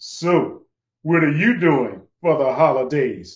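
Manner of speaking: slightly deep put-on voice. Retelling a line said while studying together: retelling a little deep voice. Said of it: "hit Nina with a little deep voice".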